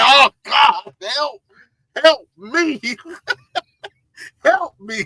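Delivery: very slow, drawn-out, pained, suffering pleading tone. Imitating a man whose face showed pain, retelling a pained plea. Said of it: "You can see the pain on it. He was like".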